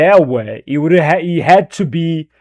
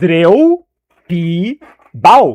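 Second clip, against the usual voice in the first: swooping Brazilian pronunciation of "three P balls". Repeating a phrase for Retro the way a Brazilian would say it, Brazilian pronunciation. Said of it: "That's how Brazilian would uh, say that".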